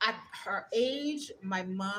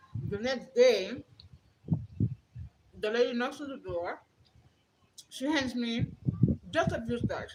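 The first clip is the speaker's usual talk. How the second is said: talking with mouth full while eating, higher pitched; 4 semitones higher, 4 dB louder than usual. Telling a story while eating, talking with mouth full. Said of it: "I'm also eating".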